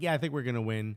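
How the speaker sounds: ordinary talk, nothing marked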